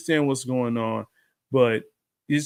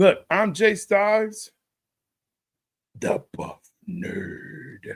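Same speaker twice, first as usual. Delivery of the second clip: slow, evil mastermind supervillain voice; 8 semitones higher than usual. Introducing yourself by name; supervillain voice. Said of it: "you said it like a supervillain just now".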